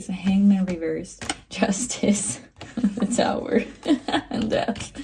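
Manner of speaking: speaking through laughter. Reading out tarot cards, laughing while talking. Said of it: "I'm sorry, I'm laughing".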